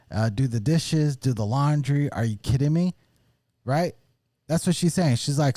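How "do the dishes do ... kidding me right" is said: put-on heated rant, mild toned-down yelling. Recounting what a woman on a podcast says, imitating her yelling. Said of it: "she's just yelling. And she says".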